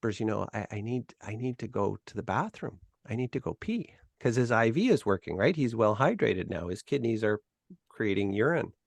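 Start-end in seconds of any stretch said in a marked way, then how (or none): 0.2-2.8 whisper, much quieter and lower. Retelling how a patient asked staff to use the bathroom, retelling a whisper. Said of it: "And he whispers".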